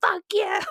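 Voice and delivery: very high, screamed outburst. Retelling a road rage fight, imitating the other driver screaming. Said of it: "this lady was, like, screaming at me".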